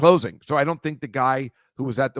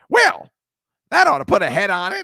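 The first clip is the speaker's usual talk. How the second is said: very high, loud witchy chicken voice; 13 semitones higher, 6 dB louder than usual. Speaker imitates how the chicken in a movie talks, Wicked Witch-like chicken voice. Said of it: "it talks like this. kind of like the Wicked Witch".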